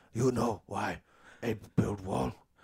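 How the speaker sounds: low, slow, hushed, secretive ape voice with broken speech. Playing an ape slave who whispers while lifting bricks: talking ape slave voice. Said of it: "the ape slaves start talking amongst each other".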